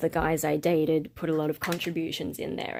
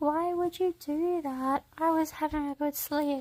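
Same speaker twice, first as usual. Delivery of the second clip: very high, squeaky, rushed, complaining dog voice; 11 semitones higher than usual. Voicing the dog woken up by the lights: voicing the dog. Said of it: "He's like".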